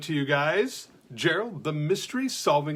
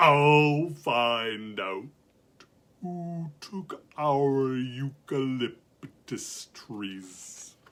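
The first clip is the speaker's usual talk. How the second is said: very, very slow, every word stretched out; 2 semitones lower than usual. Reading a story aloud, the narrator gives a sloth's line very, very slowly. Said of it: "he said, very, very slowly".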